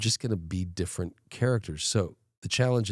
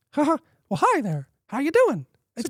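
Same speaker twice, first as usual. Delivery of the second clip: put-on cartoon mouse voice, higher, louder; 8 dB louder than usual. Show the others the impression you used to do as a kid, in a Mickey Mouse voice. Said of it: "And then I used to imitate Mickey Mouse".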